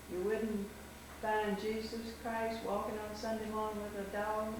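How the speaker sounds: plain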